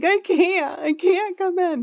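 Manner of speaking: play-acted very high, drawn-out tearful crying voice. Retelling a call to the boss about missing work: retelling crying.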